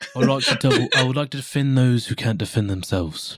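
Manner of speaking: put-on British accent. A player in a role-play game speaks as their new character, in a British accent. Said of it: "And I say it in a British accent".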